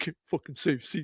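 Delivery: quiet muttering mumble under the breath. Retelling how the man walked off after being told to leave the seat, imitating someone mumbling. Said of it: "he's just mumbling under his breath".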